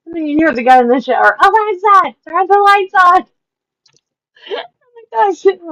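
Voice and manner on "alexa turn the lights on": put-on yell, higher and louder. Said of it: "would yell".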